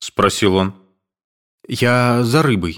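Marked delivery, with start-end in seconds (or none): 1.7-2.8 mumbled, lips barely moving, higher and slower. Caught by an old man, the intruder answers his question, mumbling with barely moving lips. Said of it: "бормотал Александр, едва шевеля губами".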